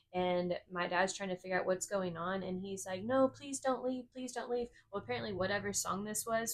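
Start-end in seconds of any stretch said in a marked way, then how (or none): 3.0-4.6 put-on play-acted, high, tearful, sobbing, pleading little-kid voice. Retelling a four-year-old brother crying in the car: imitating a crying child pleading. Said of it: "just starts crying".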